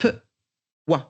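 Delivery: peu, then brief break, then wa. Teaching a child to blend two sounds, short pause between 'peu' and 'wa'. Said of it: "On va laisser comme une mini pause pour que l'enfant puisse les mettre ensemble".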